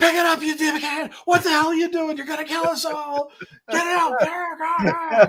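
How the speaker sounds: very high-pitched screaming yell. Recounting other guys yelling at a struggling man, retelling men screaming at someone. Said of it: "they're just screaming at him".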